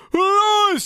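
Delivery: very high scream, darkened in the throat. Showing a darker scream placement on one word: scream placed back in the throat. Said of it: "a bit more back in our throat".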